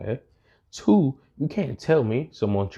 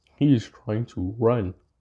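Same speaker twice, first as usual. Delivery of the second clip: normal talking voice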